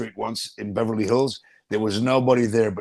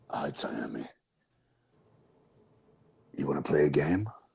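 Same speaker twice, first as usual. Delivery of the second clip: very low, deep, soft, hushed horror villain voice; 8 semitones lower, 8 dB quieter than usual. Asked to do the Jigsaw voice, greeting an eight-year-old in Jigsaw voice. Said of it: "You want me to do his voice?".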